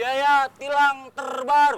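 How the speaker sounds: loud, high parade-commander announcing voice. Reading out a message about new traffic fines to another speaker, in a ceremony commander voice. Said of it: "laga lu kayak komandan upacara".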